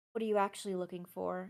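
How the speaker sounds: flirty, smiling. Reading a scene aloud, a woman turns to a man and asks, flirtatious. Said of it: "tries to smile in a flirtatious manner".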